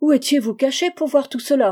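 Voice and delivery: loud, high, startled cry, fearful and suspicious. John Rand leaps up and demands an answer from Holmes, frightened, suspicious cry. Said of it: "S'écria-t-il".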